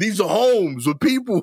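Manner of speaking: very high-pitched, begging, pleading voice. Imitating a wildlife official talking to a bear: imitating someone pleading. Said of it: "he sounds like he's pleading with the bear".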